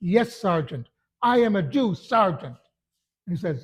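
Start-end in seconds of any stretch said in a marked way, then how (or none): 0.0-2.5 full-throated yell at the top of the voice. Recounting how the sergeant made this fellow answer him, retelling a yell. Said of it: "Made him yell it at the top of his voice".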